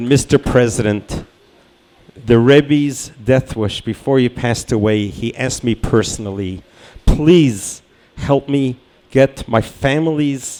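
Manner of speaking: ordinary delivery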